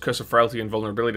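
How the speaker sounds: talking too fast, rushed rattle.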